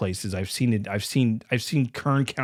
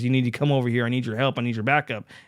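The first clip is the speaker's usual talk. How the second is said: put-on frantic pleading, faster. Retelling a paranoid man's phone call asking the speaker for help, imitating a frantic plea. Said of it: "he's calling me frantically and says".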